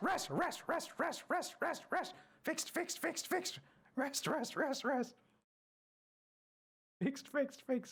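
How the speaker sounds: very high, voice shifting from word to word. Voicing a creature that repeats a word it heard, Kanku parroting words. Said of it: "It says it in like a bunch of different voices. / It's like a mix of words. It's like it sounds like someone's editing them out of place and putting them together. You're not sure if like they were al".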